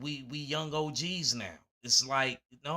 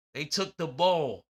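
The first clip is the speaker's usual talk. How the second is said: loud Philadelphia street accent; 2 semitones higher, 6 dB louder than usual. Speaker talking about rappers repeats his own phrase in a Philly accent. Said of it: "Philly accent".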